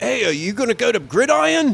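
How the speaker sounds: very high-pitched, bad Australian accent. Retelling what Australian guys at a Barcelona hostel asked, in a bad Australian accent. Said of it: "that was a bad accent".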